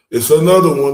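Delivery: booming, loud hype-man shout.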